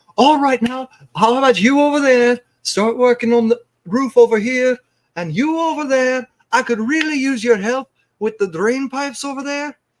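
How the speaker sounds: very high, loud, cheery and chipper voice. Speaker voices a woman calling out orders and reassigning tasks, in a very chipper voice. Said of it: "she's calling out orders in a very chipper voice".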